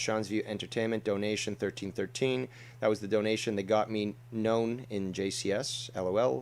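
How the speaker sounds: usual speaking voice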